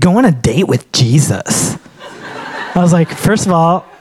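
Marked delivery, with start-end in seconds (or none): 0.0-1.8 slow, teasing, mocking valley girl voice. Retelling how someone mocked a sermon line, in a mocking valley girl voice. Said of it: "you don't have to say it like that. ... mock me in the spirit of a valley girl".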